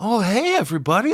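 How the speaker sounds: fake, over-the-top jovial, fake-cheerful voice, very high. Recapping a movie scene, imitating a character's greeting: over-the-top high-pitched jovial voice. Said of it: "over the top in a high pitch".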